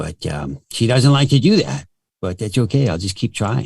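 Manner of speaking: put-on dog voice. Speaker talks as their pet Corgi, in a Corgi dog voice. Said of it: "so the Corgi sounds like this".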